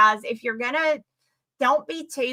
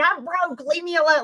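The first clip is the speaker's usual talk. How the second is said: high-pitched, screamed-out outburst; 6 semitones higher than usual. Retelling how someone reacted during a stream: imitating someone screaming.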